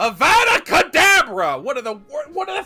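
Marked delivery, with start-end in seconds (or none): 0.0-1.6 yelling, higher and louder. Retelling a story scene where Harry casts a spell: imitating Harry yelling a spell. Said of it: "After Harry yells".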